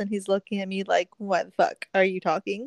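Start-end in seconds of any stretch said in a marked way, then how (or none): none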